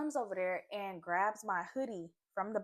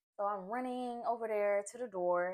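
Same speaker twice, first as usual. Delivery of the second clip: ordinary delivery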